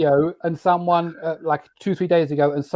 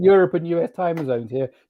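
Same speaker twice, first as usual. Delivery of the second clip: usual speaking voice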